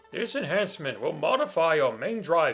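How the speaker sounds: put-on old man voice with swooping pitch. Reading Mega Man X capsule dialogue aloud: put-on old man's voice. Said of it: "I'm using a voice that sounds more like what's the guy's name from Mega Man Legends? The old guy".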